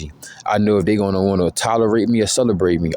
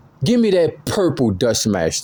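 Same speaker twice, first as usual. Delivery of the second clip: emphatic, attention-grabbing, high, swooping tone; 5 semitones higher than usual. Retelling asking a cashier for an item: imitating own loud demand. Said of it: "I say it loud so the whole store could hear me".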